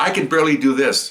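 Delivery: ordinary talk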